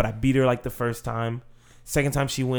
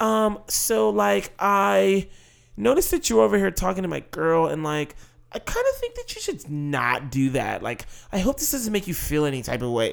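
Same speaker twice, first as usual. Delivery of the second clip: overly polite, careful, high sing-song voice; 7 semitones higher than usual. Retelling how the other girl rephrased her complaint: imitating an overly polite rendition. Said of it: "she does this whole, like, rendition".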